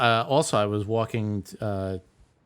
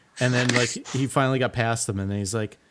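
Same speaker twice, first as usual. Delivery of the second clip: plain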